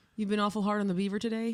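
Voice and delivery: ordinary talk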